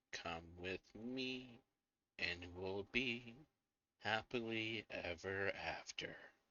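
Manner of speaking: soft, hushed half-whisper. Narrating a scene, the speaker gives the words of the door-like thing, half-whispering. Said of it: "And it whispers again".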